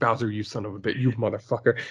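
put-on muttered whisper. Picturing Luigi cursing Bowser alone, mock whispering to himself as Luigi. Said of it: "him whispering to himself would just be like".

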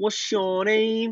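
very high put-on Birmingham accent, words bent. Chatting with friends about how people from birmingham bend their words; imitating a birmingham accent. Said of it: "they speak like that".

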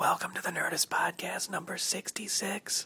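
high-pitched, hushed whisper. Host opening the podcast at 6:47 a.m. in a hotel room, whispering. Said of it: "I'm whispering because it's 6:47 in the morning".

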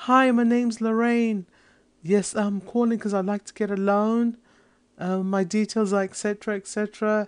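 very high, pathetic-sounding. Recreating a past phone call asking for a loan: high-pitched voice. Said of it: "my high-pitched voice would be something like".

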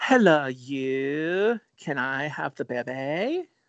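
the word "you" stretched out. Speaker practicing an impression mid-conversation, bad Moira Rose impression. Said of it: "I'm trying to get my Moira Rose impression down".

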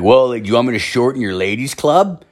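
put-on condescending, snide, snarky old man voice. Speaker retelling what a man said to him with people around, mimicking a snarky old man. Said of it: "said it in a very fucking snarky old man way".

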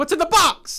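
acted out, sharp and very high-pitched. Speaker acts out one version of a man's repeated line, retelling a sharp delivery. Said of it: "Then he has one that's like sharp".

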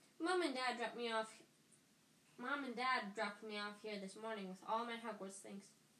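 plain reading voice

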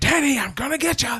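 mock shrill, very high-pitched shouting. Recapping a chase scene, the speaker acts out a character's threat: retelling a yell. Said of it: "he's yelling at him like".

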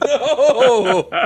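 shocked, very high squeal through a laugh.

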